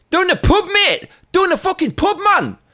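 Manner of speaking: put-on Geordie Newcastle accent, very high-pitched and loud. Recounting what they said to their cousin, the speaker puts on a Newcastle accent. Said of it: "in a Newcastle accent".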